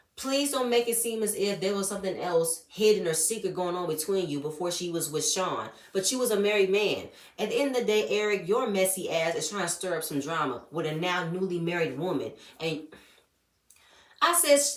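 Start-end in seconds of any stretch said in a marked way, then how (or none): none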